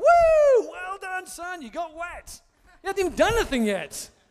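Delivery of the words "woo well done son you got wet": loud, high, over-proud dad cheering. Imitating an embarrassing father cheering at a baptism: imitating an embarrassing cheering father. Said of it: "the embarrassing father who's like".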